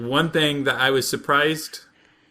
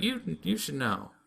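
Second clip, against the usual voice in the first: mock pouting girl voice, higher and quieter; 3 semitones higher, 10 dB quieter than usual. Retelling an anime scene, quoting the sister at breakfast: imitating a pouty girl. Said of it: "and she's pouty".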